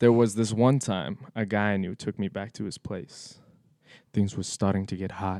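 put-on on-air radio announcer delivery. Reading a story aloud in a put-on radio voice. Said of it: "Here's my best radio voice".

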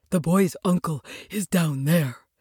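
softly and quietly spoken. Narrator reading a dog character's line to the doctor, quietly. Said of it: "said Jip quietly".

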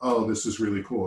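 ordinary talk

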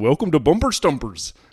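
put-on loud, thick Canadian game-show host accent. Recalling a favorite childhood game show, the speaker imitates the Bumper Stumpers host's heavy Canadian accent. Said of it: "The host had a heavy Canadian accent".

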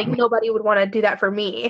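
ordinary talk

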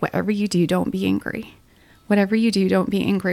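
plain

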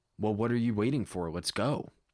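ordinary talk

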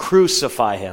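ordinary talk

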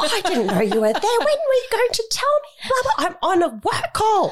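mock very high, shrill, swooping, rising yell. Retelling a woman on your call yelling at someone, imitating her yelling. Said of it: "I hear her yelling at her".

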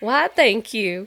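put-on American southern accent. Thanking two people for their compliments, in a southern accent. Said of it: "a southern accent yes".

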